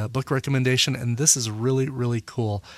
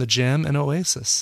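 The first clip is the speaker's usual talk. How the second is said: plain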